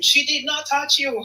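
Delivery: acted high shout. Telling a story about a man on a plane, retelling passengers shouting back. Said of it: "shouting back at him".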